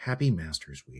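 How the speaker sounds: voice dropped low like golf commentator. Speaker addresses everybody before a separate video, in a slightly hushed tone. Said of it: "I should do this in a slightly more hushed tone".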